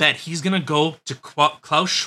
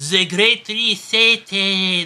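fake German accent on Great Reset; 3 semitones higher than usual. Joking with the other speaker about how they sound in germany, mock german accent. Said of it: "That's how they sound in Germany".

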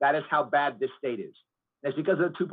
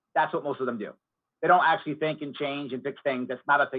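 ordinary talk, nothing marked

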